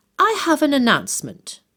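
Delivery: lofty, superior voice. Narrator reading a girl making an announcement at the breakfast table, very haughty tone. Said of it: "she began in a very haughty tone of voice".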